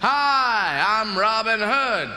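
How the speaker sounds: very slow American drawl, hi drawn out. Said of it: "they gave it an American accent".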